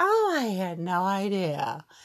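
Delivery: teasing, taunting echo, idea drawn out. Retelling what a woman said about the fallen concrete, a mocking imitation of her. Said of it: "I was totally mocking her".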